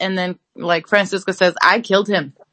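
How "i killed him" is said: put-on casual, deadpan voice. Retelling a character's answer about her dad: imitating Francisca's matter-of-fact tone. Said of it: "she says it like, uh, you know, "I ate rice yesterday,"".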